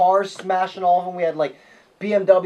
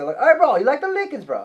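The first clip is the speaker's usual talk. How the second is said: casual, high, put-on Hawaiian accent; 7 semitones higher than usual. Asked if it was Irish, speaker shows it was a put-on Hawaiian accent. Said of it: "No, the Hawaiian accent".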